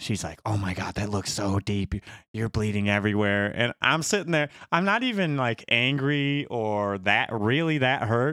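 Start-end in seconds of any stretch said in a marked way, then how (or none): 0.4-3.5 put-on, panicked voice. Retelling a wife's reaction to a bleeding head cut: imitating someone panicking. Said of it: "she's panicking".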